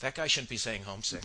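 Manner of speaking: ordinary talk, nothing marked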